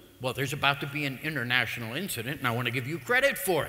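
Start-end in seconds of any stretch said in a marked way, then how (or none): none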